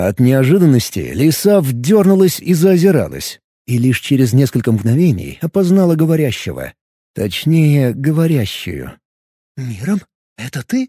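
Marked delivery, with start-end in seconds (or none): 9.6-10.9 strained, choked whisper, quieter and slower. Startled by a familiar female voice, a woman recognizes the speaker in a strained whisper. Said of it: "прошептала она сдавленным тоном".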